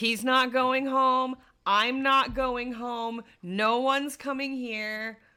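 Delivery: slow, ominous, terrifying, creepy delivery. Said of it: "Sounds so terrifying when you say it like that".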